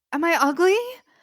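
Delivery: groggy, worried voice.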